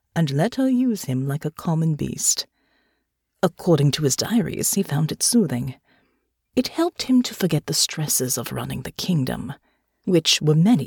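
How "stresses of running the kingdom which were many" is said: plain reading voice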